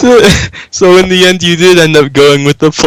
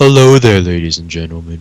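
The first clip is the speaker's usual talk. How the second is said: mock mellow calm voice, lower; 11 semitones lower than usual. Imitating another speaker's series opening: imitating a mellow calm voice. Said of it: "He's very mellow at first".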